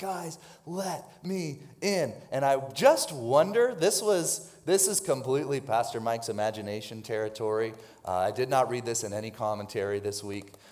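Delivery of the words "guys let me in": slow, hushed, loud stage whisper. Retelling a story, speaker voices a man knocking to be let in, in a loud whisper. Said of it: "like that loud whisper".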